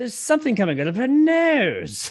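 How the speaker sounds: exaggerated high British accent. Quoting what he says in the film: exaggerated high British accent. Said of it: "I love that like exaggerated high British accent".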